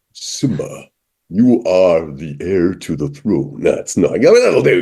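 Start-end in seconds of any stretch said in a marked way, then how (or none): 0.2-3.6 voice dropped right down. Trying a Mufasa impression after others urge it: James Earl Jones as Mufasa. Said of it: "Can I do James Earl Jones? I've never tried Mufasa before".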